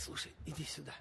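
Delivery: low, hushed voice.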